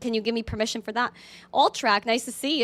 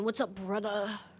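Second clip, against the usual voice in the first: attempted big manly voice, reaching for it; 3 semitones lower, 10 dB quieter than usual. Trying out a voice for the chat, like Hulk Hogan: Hulk Hogan voice. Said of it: "like Hulk Hogan".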